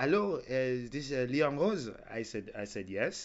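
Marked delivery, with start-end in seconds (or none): 0.0-1.9 put-on French accent. Retelling a phone call from a French girl, in a French accent. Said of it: "I have to do the accent".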